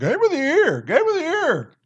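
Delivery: poor caricature, very high, swooping put-on voice. Mimicking the other speaker's earlier praise of a game: poor impersonation of the other speaker. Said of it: "another poor impersonation".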